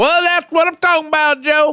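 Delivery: put-on high, loud thick hometown accent. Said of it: "People can barely deal with my accent".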